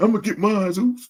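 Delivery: high voice, right on the verge of crying. Quoting a wrestler's line to mock it: imitating Jay sounding about to cry. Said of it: "then you sounded like you about to cry".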